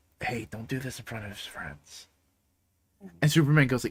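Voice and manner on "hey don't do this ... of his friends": hushed, barely whispered mutter under the breath. Retelling a comic scene where Dick speaks to Superman: imitating someone muttering under breath. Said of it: "under his breath".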